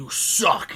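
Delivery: loud, evil demon voice. Recalling a game played growing up whose voice taunted on dying, imitating a demonic game voice. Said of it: "this demonic voice would go".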